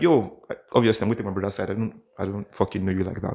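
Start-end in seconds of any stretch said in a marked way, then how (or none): none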